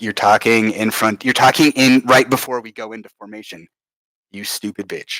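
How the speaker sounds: plain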